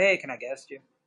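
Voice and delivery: casual, offhand, plainly spoken. Showing how the question is normally asked: casual asking tone. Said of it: "normally I just ask people".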